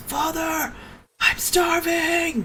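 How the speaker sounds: very high voice creeping up from underneath. A game narrator voices an unseen figure beneath the players, crawling up from below. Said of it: "you hear a voice now crawl out from now you can tell it's underneath you".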